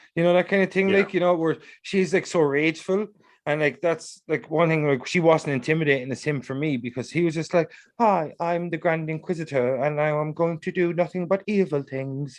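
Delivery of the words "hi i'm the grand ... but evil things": low-key, mild-mannered, understated villain voice. Comparing villains, the speaker imitates the Grand Inquisitor, softly spoken. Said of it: "I just love that kind of softly spoken villain".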